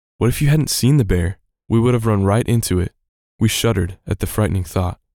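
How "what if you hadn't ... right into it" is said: normal talking voice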